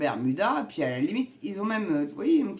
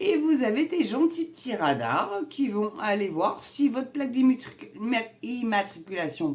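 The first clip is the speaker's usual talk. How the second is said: high, flustered, irritated stumbling over the word; 6 semitones higher than usual. Explaining the new traffic-lane rules, stumbling over words, annoyed. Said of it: "je bafouille parce que ça m'énerve".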